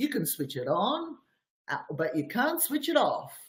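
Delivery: put-on Australian accent. Retell what a man said by a light switch in his Facebook video, in [name]'s Australian accent. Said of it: "in his Australian accent".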